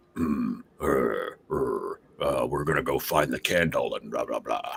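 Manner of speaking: low, hemming put-on fantasy goblin voice. Showing how game masters voice goblins in D and D: demo goblin voice. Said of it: "the goblins will all usually be like".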